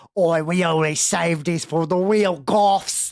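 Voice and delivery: fantasy orc monster voice. Narrator redoes the salesperson's line in the orc voice that was requested. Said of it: "That's the orc voice you wanted".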